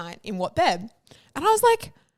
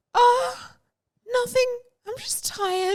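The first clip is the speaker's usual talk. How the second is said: slow, pitched-up sad voice; 13 semitones higher than usual. Retelling a friend answering the phone: imitating a sad voice. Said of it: "You sound so sad".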